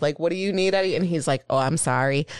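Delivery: ordinary talk, nothing marked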